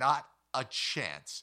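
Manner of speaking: loud, booming, full-throated bellow. Telling a story about a man and a tarantula, quoting him: retelling a bellow. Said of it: "he bellowed".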